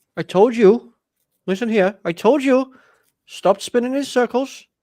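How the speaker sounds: very high, loud put-on Welsh accent. Commentating on a match replay with friends, attempting a rugby Welsh accent. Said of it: "trying to do that rugby Welsh accent thing".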